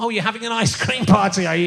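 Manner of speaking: put-on sarcastic tone. Recounting what someone said to them last time, retelling a sarcastic remark. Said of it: "but it's much more sarcastic".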